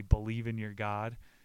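plain

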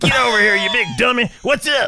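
very high, hollered, put-on yelling voice. A dad showing how he embarrasses his son around the son's friends, retelling a yell. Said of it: "you're like yelling at his friends".

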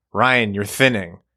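accusatory, blame-laying tone. Retelling a haircut, the speaker quotes the barber, imitating Tony's accusatory tone. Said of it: "he said it in such an accusatory tone".

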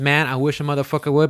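ordinary talk

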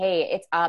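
ordinary delivery

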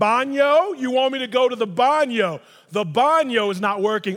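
loud, slow, spelled-out over-enunciation. Speaker acts out talking to someone who speaks another language: imitating loud, slow talking. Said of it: "my voice increase and I start talking slower".

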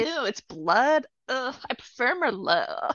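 put-on very slow, drawn-out valley girl voice. Imagining how Luther would talk about the blood, as a valley girl. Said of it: "more of like a valley girl being like".

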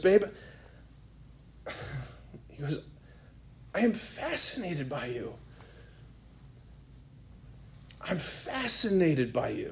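imitated shaking voice. Acting out what a man said to a woman, imitating a shaking voice. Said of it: "his like voice is shaking".

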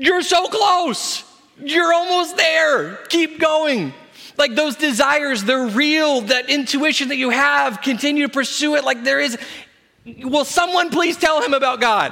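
put-on high, stretched yell. Recalling yelling into headphones in the garage during a conversation, retelling a yell. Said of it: "I'm yelling into my headphones".

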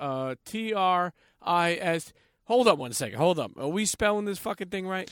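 loud alarmed rapid delivery.

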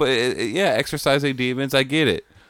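ordinary talk, nothing marked

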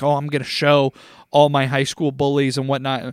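ordinary talk

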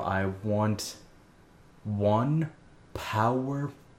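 very slow, each syllable carefully spelled out. Retelling a customer buying lottery tickets, mimicking his careful enunciation.

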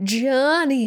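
bad high-pitched shout. Recapping Dirty Dancing, calling out a name in a bad Jennifer Grey impression. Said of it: "That's my very bad impression of Jennifer Grey later in the film".

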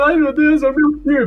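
mock sobbing, high crying voice. Describing a giant R appearing on screen, imitating Robin crying. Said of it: "o Robin começa a chorar".

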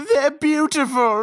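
put-on high bawling sobs through the words. Retelling how a midwife reacted to a birth: imitating someone bawling. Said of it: "she is fucking bawling, like".

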